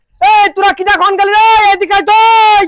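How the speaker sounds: shouting. Calling someone over in a scene, shouting. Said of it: "এত চেঁচাচ্ছ কেন?".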